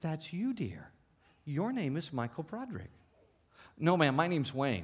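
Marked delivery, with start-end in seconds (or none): 0.0-2.9 very gentle, soft, tender, kindly tone. Retelling what an authority figure said while pointing at him, imitating a very gentle voice. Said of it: "very gently said".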